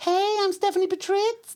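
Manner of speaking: very high-pitched speaking voice. Imitating an actress's real speaking voice: high-pitched voice. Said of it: "you hear her speak and she's like".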